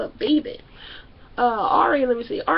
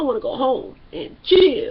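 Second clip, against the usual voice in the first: chill stressed hard and loud. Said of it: "Emphasis on chill".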